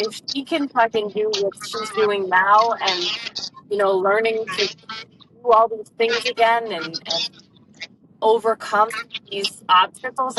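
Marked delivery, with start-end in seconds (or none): none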